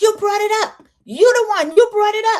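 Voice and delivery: very high-pitched, shrill shouting. Retelling an argument in the car, imitating someone yelling. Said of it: "Liz is yelling".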